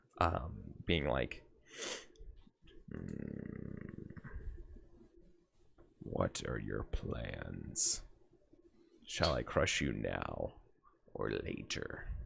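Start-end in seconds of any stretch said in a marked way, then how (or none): 2.9-12.1 sinister, dark, ominous whisper, very slow. Retelling a scene from a show, the speaker imitates the voice heard, in a dark, ominous voice. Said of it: "this dark, ominous voice".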